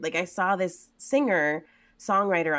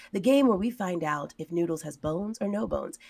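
even, calm public-radio announcer voice. Describing a pug owner's daily Bones or No Bones game, in his NPR-style voice. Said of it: "he talks in a very, like, NPR-y type of voice".

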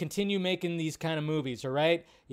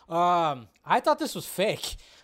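ordinary delivery

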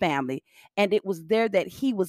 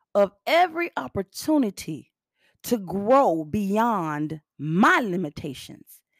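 speaking much slower, slowed-down delivery. Repeating a line for the people in the back who missed it, slowed-down delivery. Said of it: "I'm going to slow it down".

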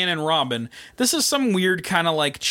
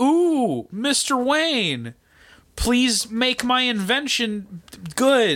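put-on pleading movie villain voice, higher; 8 semitones higher than usual. Recapping a Batman Forever scene, acting out a plea: Jim Carrey impression. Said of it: "fucking Jim Carrey is like".

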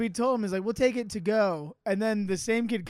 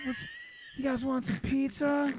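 put-on stoner voice, higher and quieter; 5 semitones higher, 4 dB quieter than usual. Retelling what the stoner guy behind the pizza counter said: imitating a stoner guy. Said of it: "such a, like, Narbro stoner guy".

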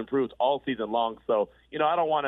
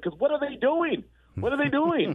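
put-on yelling and screaming, higher; 13 semitones higher than usual. Retelling watching the game at home: imitating own yelling at the tv. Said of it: "listening to me yelling, screaming at the T V".

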